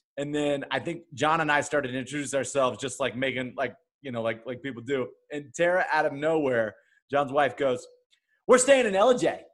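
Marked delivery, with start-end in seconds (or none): 8.4-9.3 mock high scream with full-on aggression. Retelling what a companion's wife suddenly blurted during introductions: retelling a super aggressive line. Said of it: "the way she said it was super aggressive".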